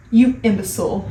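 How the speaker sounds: ordinary delivery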